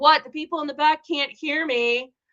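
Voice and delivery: playful shout. Retelling calling out to someone at the back of the room: imitating own yelling. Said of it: "So I just started yelling at him".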